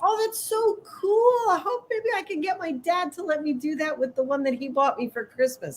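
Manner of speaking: put-on gushing, thrilled girl's voice, pitched high. Retelling what a girl said to the speaker recently: imitating an excited girl. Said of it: "all excited about".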